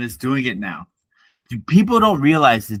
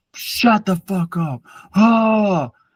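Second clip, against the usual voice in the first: put-on scream, higher; 5 semitones higher than usual. Retelling how an older fan three rows up turned around: imitating someone screaming. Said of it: "turns around and starts screaming".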